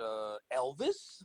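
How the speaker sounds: mock, cheeky, tossed-off wise-guy smart-aleck delivery. Retelling answering a friend at the door: imitating own wise-guy reply. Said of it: "I was a wise guy".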